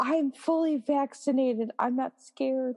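mild, high-pitched screamed yell. Recounting what their brother said outside the car, imitating brother screaming. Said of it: "he's screaming this at me".

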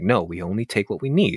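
acted, very stern voice. Retelling how an older character refuses a little boy a toy, retelling a very stern reply. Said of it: "very sternly says".

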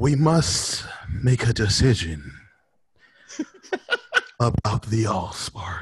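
put-on slow robotic voice. Complaining about how Prime talked, speaker mimics him: slow Prime impression. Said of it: "always talking so slow like this".

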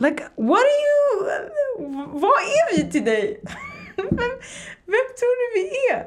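high, slow exasperated cry.

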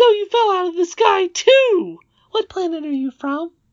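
creepy squeak, very high and loud. Reading aloud a character's line in a story, in a creepy Mickey Mouse voice. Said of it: "You're going a little creepy, Mickey Mouse".

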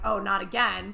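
ordinary talk, nothing marked

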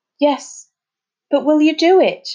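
high pleading voice. Told he will be let out here, he asks Tom to do it, begging. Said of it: "begged Finn".

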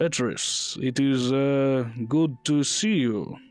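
poor put-on Dutch accent. A shopkeeper in a told story greets petrus, in a bad dutch accent. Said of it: "I can't do a Dutch accent".

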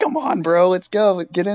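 loud, far-carrying hollering yell. Retelling how his friend yelled out of a car window, retelling a yell. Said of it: "And he's yelling out the window".

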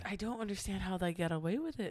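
line suddenly slipping into a Scottish accent. Complaining about a popular creator's videos, suddenly in a Scottish accent. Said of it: "Why did you turn into Scottish?".

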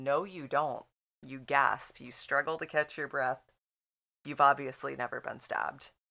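acted-out composed, unruffled, very calm voice. Retelling how someone answered a director who wanted a scream, retelling a calm reply. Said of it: "Lee ever so calmly looks at him".

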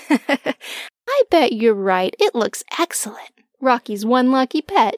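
light, sing-song, playful teasing voice. Mama replies about the pet Rocky, teasing, with a little tease in her voice. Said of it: "with a little tease in her voice".

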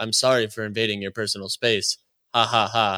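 low, dead flat monotone. Retelling a moment from a long conversation, in a Lex Fridman monotone impression. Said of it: "basically the exact tonality that they had".

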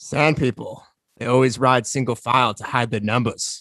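voice dropped low, like a movie voice. Ending the show with an impersonation for the others: Alec Guinness impersonation. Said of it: "my best Alec Guinness impersonation".

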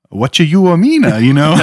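high creature character voice. Retelling a fan film where Jar Jar Binks gets fired: Jar Jar Binks voice. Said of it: "And Jar Jar's like".

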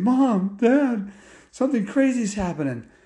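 high, put-on voice, on the verge of tears. Retelling what the kids said to their parents: imitating someone almost crying. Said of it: "almost like crying".

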